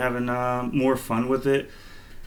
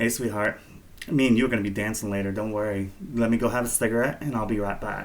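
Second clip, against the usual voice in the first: camp, flirty voice laid on thick.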